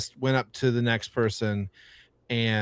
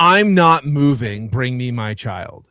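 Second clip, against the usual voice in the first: hostile demanding tone, louder; 7 dB louder than usual. Retelling a parent's demand to a teacher at pickup: imitating a hostile parent. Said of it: "She was immediately hostile".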